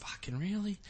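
high, hushed mutter under the breath. Retelling how parents would react to each other: imitating muttering under breath. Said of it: "under their breath to each other".

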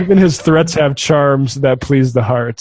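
ordinary talk, nothing marked

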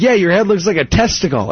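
ordinary delivery

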